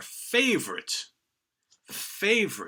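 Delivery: "favorite" heavily stressed, twice. A host welcomes everybody to the album series, with stress on "favorite". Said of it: "I stress that word favorites".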